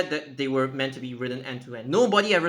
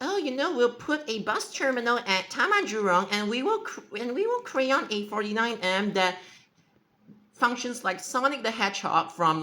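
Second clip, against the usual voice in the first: mock scornful, derisive, pitched-up voice; 9 semitones higher than usual. Imitating the people called idiots who crayon bus routes: mocking imitation. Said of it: "They're like".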